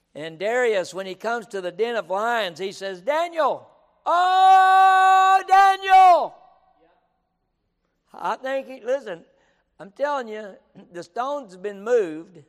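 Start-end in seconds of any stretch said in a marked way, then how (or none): 3.0-6.4 mock afflicted wail, very high and very loud. Retelling a king calling into the lion pit: imitating a lamenting cry. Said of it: "cries out to Daniel with a lamentable voice or an afflicted voice".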